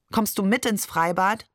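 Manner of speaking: ordinary delivery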